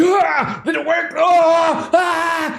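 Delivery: very high, stretched, drawn-out panicked screaming. Voicing a captive who wakes up mid-escape: character screaming. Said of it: "he starts screaming at that point".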